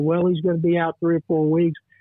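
usual speaking voice

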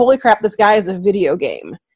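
ordinary talk

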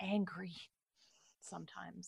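hushed whisper. Talking during a game stream, whispering. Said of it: "I'm like whispering".

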